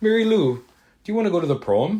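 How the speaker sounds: imitated Canadian accent. Joining in on a movie scene's lines: imitating a Canadian accent. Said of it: "their Canadian accents are jumping out".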